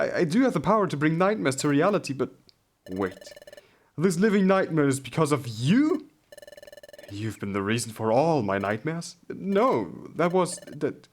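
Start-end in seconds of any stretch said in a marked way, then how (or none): 9.3-10.9 high, slow, faltering stammer, halting over words. A character accused of causing nightmares, pressed to explain, stammering. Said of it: "Spit it out".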